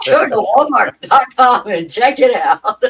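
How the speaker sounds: loud, high commercial pitch-man announcer voice. After noting their plug sounded like an ad, repeating it: commercial announcer voice. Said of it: "that sounded like a commercial".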